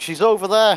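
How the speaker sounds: very loud, high-pitched shout. A player's character spots a creature hiding and points at it: shouting out. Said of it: "I'm just going to shout out".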